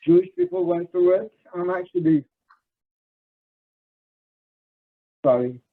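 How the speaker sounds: choking up, voice catching. Mid-speech to an audience, the speaker starts choking up. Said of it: "I'm choking up even talking about it".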